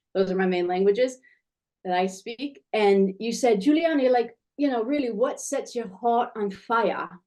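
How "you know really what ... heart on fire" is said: slow, terrible, fake put-on British accent. Quoting someone's question back to them, in a terrible put-on british accent. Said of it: "I'm going to do it in a British accent".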